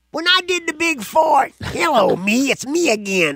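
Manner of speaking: very high, slow, dragged-out metal-singer voice. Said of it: "that was the best impression I've ever heard".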